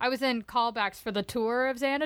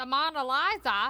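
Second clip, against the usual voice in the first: unintended Australian-sounding accent. A co-host asks the other a question, accidentally sounding Australian. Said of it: "I sounded Australian".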